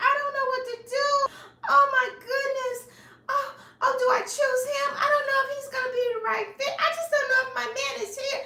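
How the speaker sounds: very high, tearful, sobbing wail. Retelling how a woman on a show cried over her choices: imitating someone crying. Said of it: "She is crying like".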